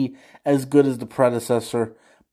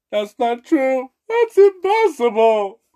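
acted-out sobbing, high, tearful, very high voice; 11 semitones higher, 4 dB louder than usual. Acting out the scene after Vader's line: crying Mark Hamill impression. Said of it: "that's my impression of a crying Mark Hamill".

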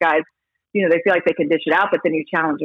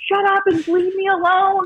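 mock furious yelling, pitched way up. Retelling an argument with him while she was pregnant, retelling her own yelling. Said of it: "And so I'm yelling".

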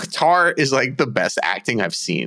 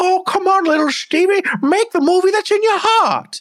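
very high, loud, urging voice; 5 dB louder than usual. Imagining an actress's performance in a film: Michelle Williams impression. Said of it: "That's why I did that voice".

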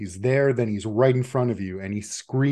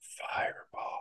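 thin, weary, hushed, dry, wispy whisper. An unseen voice speaks from the far corner of the room: dry, wispy, tired voice. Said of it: "a voice, dry, wispy, tired, say".

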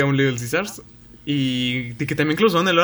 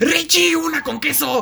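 mock very high, stretched-out, drawn-out rude holler; 13 semitones higher than usual. Retelling how the cashier shouted orders to the pizza makers, retelling a rude yell. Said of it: "les gritaba así mamón".

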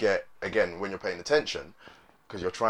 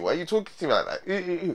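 mock disgust, higher pitch; 9 semitones higher than usual. Acting out a woman answering the guy: imitating a disgusted woman. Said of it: "the woman looks at him like".

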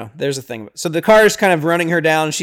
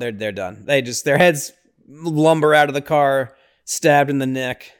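ordinary delivery

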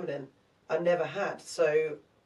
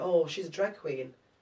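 ordinary talk, nothing marked

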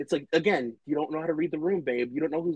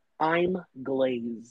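flat, expressionless, put-on delivery. Quoting a line said mid-argument: deadpan Heather Dubrow imitation. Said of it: "she'll go full blank face, give no expression".

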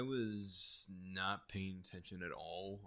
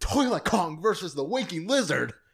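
piercing high shout at full volume; 11 semitones higher, 17 dB louder than usual. Retelling how a teacher ripped the paper away: imitating the teacher yelling. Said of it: "she just yells out loud".

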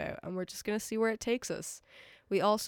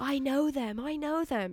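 high, drawn-out scream; 7 semitones higher, 3 dB louder than usual. Retelling how a girl screamed at the man overseeing, imitating a scream. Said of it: "she's screaming at him".

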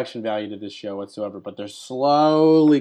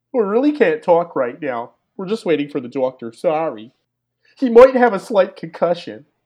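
put-on heavy Philly accent, pitched up and loud; 6 semitones higher, 5 dB louder than usual. Waiting on the doctor for a possibly concussed man, she turns someone away: Peaches's Philly accent. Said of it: "This is a really great Philly accent she's got here".

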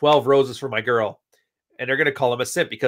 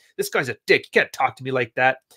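mock-angry, offended tone. Retelling what an offended woman said about him, imitating an angry woman. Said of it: "She's mad and she's angry at me".

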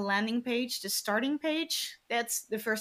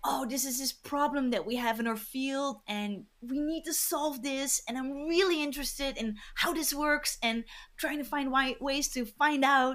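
earnest, eager, enthusiastic, passionate delivery; 2 semitones higher than usual. Describing work with researchers, the speaker shows how they talk: imitating a passionate researcher. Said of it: "you can hear by my voice".

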